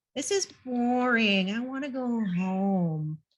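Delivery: put-on tired, whiny nasal kid voice, "home" drawn out. Demonstrating nasal sounds as a tired kid on a nature hike, whiny nasal tired-kid voice. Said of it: "Nasal things tend to sound very whiny".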